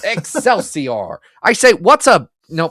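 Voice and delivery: botched, slow, loud calling-out delivery. You could do this voice in the past; try it again as a failed Stan Lee impression. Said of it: "I'm not channeling Stan right now".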